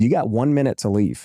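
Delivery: normal talking voice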